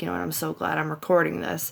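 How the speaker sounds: acted-out muttering under breath. Retelling what was said after a window was slammed: imitating muttering under breath. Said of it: "I said under my breath".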